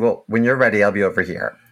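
ordinary talk

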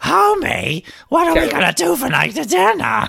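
unrehearsed cartoon housewife voice, high and rough croak. Asked by the other speaker to do one: Marge Simpson voice. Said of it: "Let's hear you do a, a Marge".

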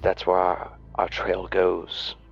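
very quiet and hushed tone. Role-playing a character signalling the other two to listen, in a hushed tone. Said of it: "very quietly, in a very hushed tone".

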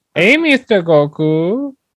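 put-on effeminate Spanish voice. Friends imagining a different voice for a dubbed cartoon character, effeminate Spanish voice. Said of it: "He had like an effeminate Spanish voice".

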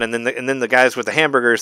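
ordinary delivery

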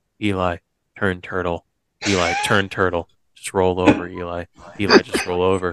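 urgent half-whisper, close to the ear. Retelling a coach's instructions during a jetpack ride: imitating someone half-whispering. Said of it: "whispering in my ear".

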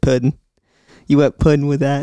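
put-on Georgia southern twang on "pudding". Retelling what a woman from Georgia said, imitating her southern twang. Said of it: "she had a little southern twang to her".

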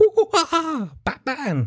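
very high, bad, swooping, hooting chimp-like laugh. Mocking an actor who hams up the role, doing a chimpanzee-like Joker laugh. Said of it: "he sounded like a fucking chimpanzee there".

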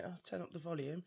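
normal talking voice

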